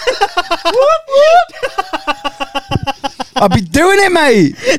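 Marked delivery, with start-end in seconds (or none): 0.0-1.5 high, celebratory whooping. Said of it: "Like it's a rave".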